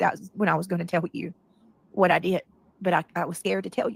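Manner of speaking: ordinary talk, nothing marked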